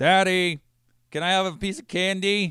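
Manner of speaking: loud, very high, put-on little kid voice. A father retells what his son said to him, in a rather loud voice. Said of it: "in a rather loud voice".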